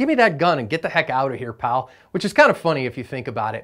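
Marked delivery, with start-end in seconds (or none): none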